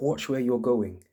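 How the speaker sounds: put-on screaming. Retelling a woman with a knife on a crowded street, retelling a scream. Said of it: "And she's just screaming at you".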